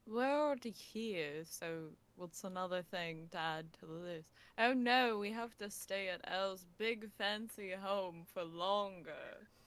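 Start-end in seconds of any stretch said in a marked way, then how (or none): 4.5-9.5 put-on complaining, fake dismay, plainly sarcastic. Joking about having to stay longer at a fancy home: sarcastic mock dismay. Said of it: "that was sarcasm".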